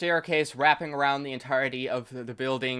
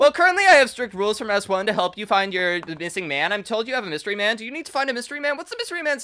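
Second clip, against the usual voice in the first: put-on very perky, bubbly teen girl voice, higher and louder; 7 semitones higher, 6 dB louder than usual. Voicing a very perky teenage girl greeting the players: very perky teenage girl voice. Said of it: "a very perky teenage girl".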